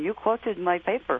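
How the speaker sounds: imitated Hungarian accent. Recalling someone calling out as he walked back to his seat, Hungarian accent. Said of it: "I heard the Hungarian voice going".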